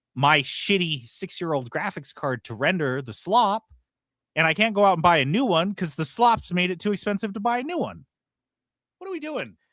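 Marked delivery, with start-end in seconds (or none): 8.9-9.4 very high, sky-high pitched voice. Ranting about expensive graphics cards, quoting Tucker Carlson. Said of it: "I was just quoting Tucker Carlson".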